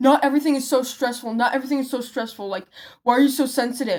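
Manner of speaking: angry, exasperated, pissed-off outburst. Retelling what a guy snapped back in class: imitating someone pissed off. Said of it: "he got so pissed at me".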